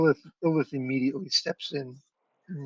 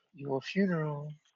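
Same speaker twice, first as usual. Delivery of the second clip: put-on muttering character voice, quieter; 5 dB quieter than usual. The storyteller voices Lilith as she turns away from you, muttering under her breath. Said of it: "you hear her mutter under her breath".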